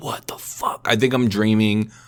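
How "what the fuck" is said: soft, breathless whisper of shock. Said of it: "I'm like".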